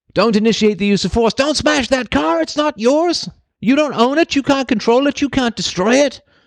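high, shrill screaming rant, pitched very high. Picturing screaming at a boulder rolling toward a car: mock screaming at it. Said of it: "I'm screaming at the rock".

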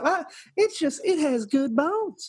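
put-on Southern accent, pitched very high. Imitating a woman from a home show commercial: imitating a southern accent. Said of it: "I love that accent".

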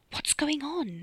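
soft half-whisper. Trapped in the dark wardrobe with Bunty, Ollie asks her: half-whispered. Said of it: "he whispered".

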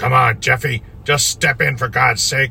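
put-on impatient, gruff, muffled mumble in old man voice. A narrator reads the old man's words to the narrator stepping into his boat: low, gruff mumbling voice. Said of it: "He barked at me in his low, gruff voice, mumbling".

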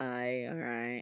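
acted offhand, dismissive "no". Retelling own replies to flirting messages: imitating own dismissive no. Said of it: "that very, like, dismissive no".

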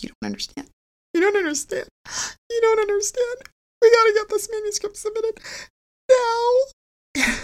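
put-on, very high, sobbing, desperate, tearful pleading voice. Speaker acts out what they kept saying to him back then, retelling a tearful plea. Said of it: "I just kept crying".

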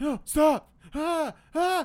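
panicked crying out, high and loud.

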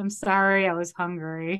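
mock panicked tone. Retelling how a startled man panics when caught: imitating a panicked apology. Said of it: "Otto panics and just says".

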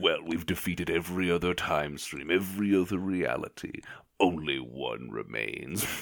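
wicked, evil royal overlord villain voice. A game master voices a lion-faced villain answering his jester, in an evil villain voice. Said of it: "[name]. And he has earned this name because he's evil royalty. He himself is a giant lion-faced, like, robo-monster man, and he's quartered".

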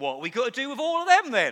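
put-on thick Suffolk accent. Speaker quotes his mum coming out into the yard, in a Suffolk accent. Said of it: "Good Suffolk accent".

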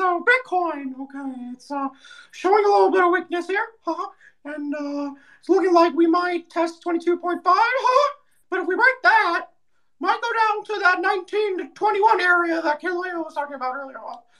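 very high-pitched little cartoon mouse voice. Asked by a host for thoughts on Bitcoin, a guest answers in a Mickey Mouse voice. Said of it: "Do Mickey, do Mickey".

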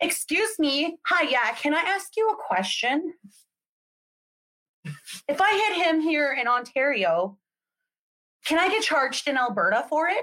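mock sassy, high, questioning tone. Retelling asking a police officer a question: imitating own sassy tone. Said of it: "all sassy".

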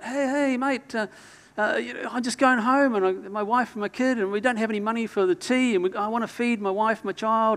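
mimicked pleading shout. Retelling a man on the street calling out to him, retelling a begging yell. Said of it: "he yells out".

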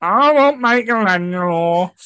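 put-on loud, high-pitched babyish voice. Retelling how a co-host claimed a toy turtle, in a baby voice. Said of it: "I really did do it in that kind of baby voice as well".

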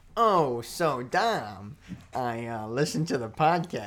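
put-on very slow, drawling old-time fifties gangster voice. Retelling what a friend said outside the car: fifties gangster voice imitating Clang. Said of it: "Why do you sound like a fifties gangster?".

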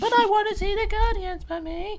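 put-on very high, loud, whiny child voice.

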